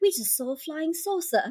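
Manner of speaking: put-on British-accented speech. Retelling telling the adults about a flying saucer as a kid, british accent. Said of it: "because I had a British accent then".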